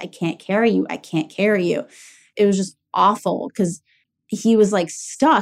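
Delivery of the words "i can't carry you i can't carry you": acted tearful, crying plea. Recalling trying to hold up their heavier dad, retelling own crying. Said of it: "And I started crying".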